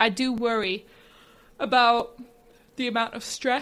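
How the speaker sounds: halting words broken up by a yawn. In a discussion, the speaker states a worry while yawning: talking through a yawn. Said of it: "Sorry, I'm yawning".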